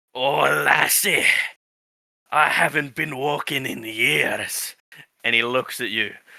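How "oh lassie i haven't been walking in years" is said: very slow, gravelly living-tree voice. Voicing a tree that wakes up and looks at you: gravelly tree voice. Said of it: "giving them more gravelly voices".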